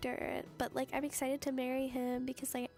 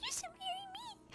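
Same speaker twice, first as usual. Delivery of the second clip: put-on tiny little voice, much higher; 5 semitones higher than usual. Speaking as a small slime character proposing marriage to another character in a story you are retelling. Little tiny voice. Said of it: "talks in like like a little tiny voice".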